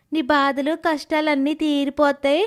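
plain

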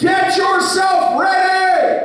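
high, slow, screaming shout. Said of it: "God is screaming from heaven saying".

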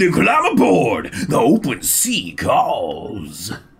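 sermonizing robot preacher voice. Answering the other players, the speaker speaks in a preacher voice. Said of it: "that is a preacher voice".

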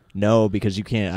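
ordinary talk

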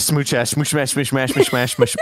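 very fast speaking. Answering a challenge to repeat a tongue twister: saying it fast. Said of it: "Say it fast".

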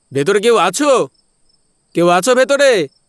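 very high, loud, carrying calling yell. Entering an old closed hospital at night, a character calls out, yelling. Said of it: "এই তুই এবার চিল্লাচ্ছিস কেন রে?".

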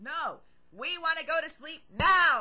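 impatient, very loud and high. Blaze, in the dormitory entrance with Crab and Goyle, answers Draco impatiently. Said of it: "Blaze said impatiently".

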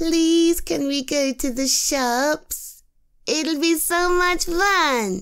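put-on high, whiny begging tone, playfully drawn out. After warning the listener, the speaker begs to go out, put-on whiny voice. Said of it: "don't make me do the whiny voice".

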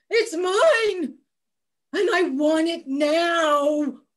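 put-on cranky, grumpy old man grumble, drawing out "now". Narrator voicing the bachelor in a story, grumpy old bachelor voice. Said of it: "there was a grumpy old bachelor".

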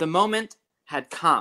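ordinary delivery

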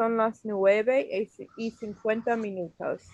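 ordinary delivery

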